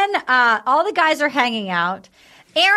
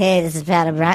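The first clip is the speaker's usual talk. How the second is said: very low, dirty, seductive voice; 9 semitones lower than usual. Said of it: "this sex voice".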